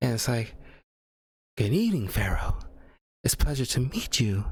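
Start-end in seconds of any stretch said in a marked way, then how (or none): 1.6-4.4 grave, mournful, somber and solemn tone. Describing how a character talks, imitating her soft somber voice. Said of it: "very somber tone of voice, uh, talk like this".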